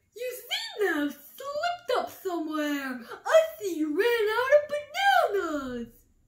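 high voice, speaking through giggles. Kangaroo, watching the crowd at Elephant's banana sale, speaks to Elephant giggling. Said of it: "Giggled Kangaroo".

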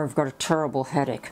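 normal talking voice

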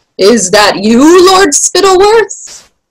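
high, distant call, climbing upward in pitch. Major Beamish answers Lord Spittleworth from somewhere in the distance, shouting back. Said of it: "Major Beamish shouted back".

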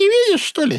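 thin, piping little voice, very high-pitched. Reading a scene of split personality, switching between voices, thin voice. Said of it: "Тоненько".

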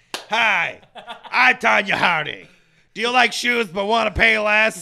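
harsh, rasping, loud voice. In a mock Payless shoes ad, the speaker plays Tonya Harding: Tonya Harding stoma-voice impression. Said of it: "Why does it sound like she has a stoma?".

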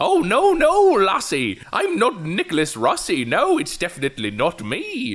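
very high, swooping, inconsistent bad Scottish accent slipping in and out. Imitate the man sought by American law enforcement, in Nicholas Rossi's bad, inconsistent Scottish accent. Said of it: "inconsistent Scottish accent".

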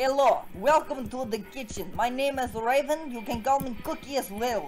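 put-on Russian accent. In a role-play, welcoming someone to the kitchen, as Raven in a Russian accent. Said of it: "let's do the Russian one".

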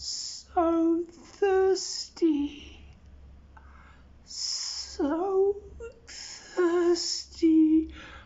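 very high, eerie ghostly calling voice. Telling why they don't practice there at night, doing the ghost scout voice. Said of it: "you can hear the voice of the ghost scout".

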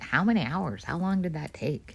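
soft, teasing, belittling put-on voice. Quoting the most common question people ask, mocking voice. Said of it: "I'm mocking people".

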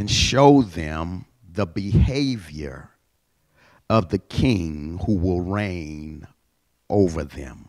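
reading at a slow pace. Reading a scripture passage aloud to listeners, reading slowly. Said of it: "I'm reading this slow".

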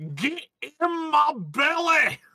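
put-on Scottish accent. Narrator voicing a voice that echoes through the hall, in a Scottish accent. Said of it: "You hear a Scottish voice echo through the hall".

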